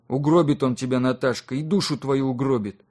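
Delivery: ordinary delivery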